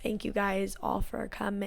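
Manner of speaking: acted flat, monotone delivery. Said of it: "she's very monotone".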